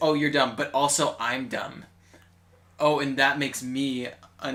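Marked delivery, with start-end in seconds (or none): none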